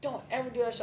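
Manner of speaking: mock, very high-pitched, shrill shouting. Retelling how she smacked his drink away: imitating someone yelling. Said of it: "starts yelling".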